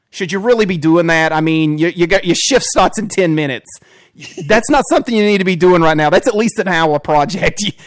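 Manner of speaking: loud, goofy cartoon-dad voice. Pitching a watchful computer with attitude that nags its user: Peter Griffin voice. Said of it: "the Peter Griffin voice with it".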